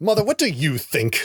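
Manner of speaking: put-on rude, snotty, bratty child voice. Imitating a child actor's line who sounded like a dick.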